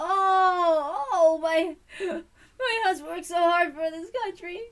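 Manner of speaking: very loud, high put-on sobbing, drawn-out oh. Attempting to fake cry while playing a wife speaking of her husband, fake crying. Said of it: "so that's my best crying attempt".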